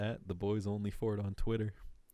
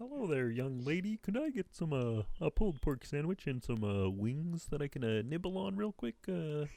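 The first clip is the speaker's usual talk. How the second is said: high-pitched cartoon puppet frog voice; 6 semitones higher than usual. Ordering a pulled pork sandwich and wings: Kermit impression. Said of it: "peak Kermit when I could really do a good Kermit".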